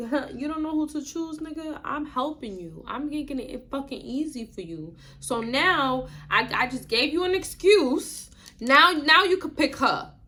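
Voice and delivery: slick, greasy, snide taunting tone, acted out. Retelling taunting a partner at a bar: imitating own snide taunting. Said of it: "I'm talking to him greasy as fuck".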